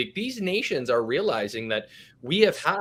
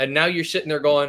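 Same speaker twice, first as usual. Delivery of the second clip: ordinary delivery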